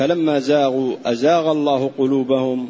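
ordinary delivery

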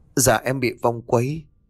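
ordinary delivery, nothing marked

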